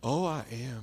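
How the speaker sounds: imitated tender, gentle voice. Retelling a dying man's reply to a prayer: imitating a tender voice. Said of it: "The tenderest voice".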